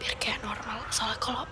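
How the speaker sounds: soft whisper. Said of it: "kalau bisik-bisik suara aku normal".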